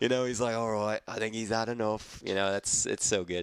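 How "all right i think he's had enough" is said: imitated British accent. Describing a favorite gangster movie scene, quoting a gangster in a british accent. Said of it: "That was my British accent".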